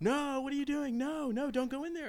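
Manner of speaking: put-on, very high, shrill, loud screaming. Retelling the moment her trash caught fire, imitating a woman screaming at her. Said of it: "she's like screaming at me like".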